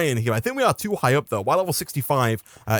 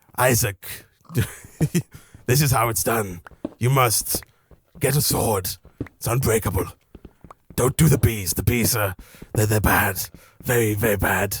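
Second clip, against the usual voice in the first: bad put-on, raspy, low wise old man voice; 4 semitones lower than usual. Imagining the others as wise old men advising someone, the speaker does a bad wise old man voice. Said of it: "I imagine you all as wise old men".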